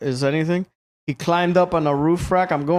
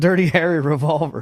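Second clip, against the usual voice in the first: ordinary delivery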